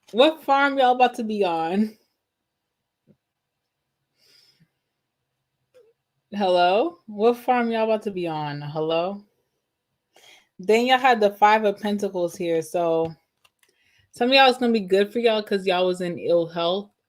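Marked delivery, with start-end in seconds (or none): 0.2-9.3 laughing while talking, cracking up. Reacting to a tarot card showing the countryside, laughing while talking. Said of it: "That's why I'm cracking up".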